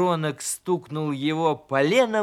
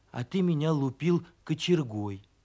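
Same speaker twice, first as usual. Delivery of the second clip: ordinary delivery, nothing marked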